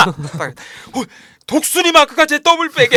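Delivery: high shout through a laugh.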